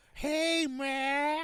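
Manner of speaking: put-on loud Southern accent, pitched very high, name drawn out. Imitating a woman's southern accent: imitating a southern accent. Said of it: "Like one of those southern ones".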